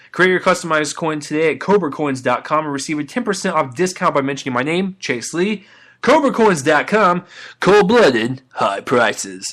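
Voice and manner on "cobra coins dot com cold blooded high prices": slow, sultry, sexy ad-style delivery. Ending a sponsor read with the tagline, sexy tagline delivery. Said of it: "I always wanna say it like that".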